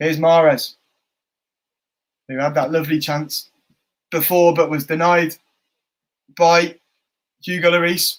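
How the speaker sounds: speech broken up by hiccups. Commentator calling a live football match, speaking with hiccups. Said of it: "I've got bloody hiccups".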